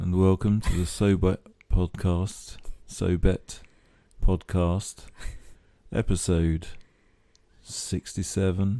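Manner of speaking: put-on sultry seventies radio DJ voice. Host opens the podcast episode: sultry voice. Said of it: "It's a very sultry voice all of a sudden".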